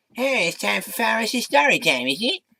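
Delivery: very high, animated cartoon voice, pitch swinging widely. Giving an old impression a shot after not doing it in ages; Cartman voice. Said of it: "I haven't done that voice in ages".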